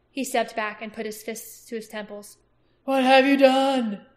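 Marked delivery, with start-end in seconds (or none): 2.8-3.9 hollow, strained, much louder, higher, slower. The king repeats his question to Aragorn, hollow and strained. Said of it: "his voice hollow and strained".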